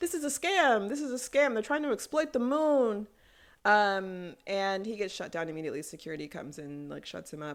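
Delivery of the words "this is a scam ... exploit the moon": acted, loud, high-pitched yelling. Retelling an announcement where Sage got shut down, imitating Sage yelling. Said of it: "he's yelling like".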